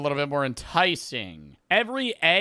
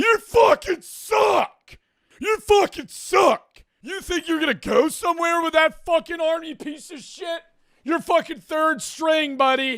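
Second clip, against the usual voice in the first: put-on rowdy drunken screaming, very high-pitched; 13 semitones higher, 4 dB louder than usual. Acting out screaming at a kid on the bench: acting out rowdy drunk screaming. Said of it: "I just start screaming at one kid".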